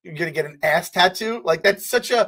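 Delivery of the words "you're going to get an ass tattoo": usual speaking voice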